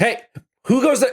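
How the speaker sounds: very high, loud shouted call. Narrator voicing an older man who jumps up grabbing his weapon, shouting. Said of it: "the older man shouts and says".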